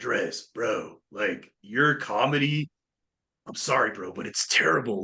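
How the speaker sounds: slow, laid-back California surfer-dude drawl. Retelling what a comedian from California told him, imitating a surfer voice. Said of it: "he had like this really surfer voice".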